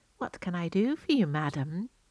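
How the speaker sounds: catlike purring voice. A young girl bows low to a visitor calling at the fence, purring. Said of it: "she purred".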